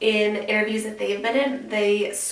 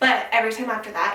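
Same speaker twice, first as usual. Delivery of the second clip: usual speaking voice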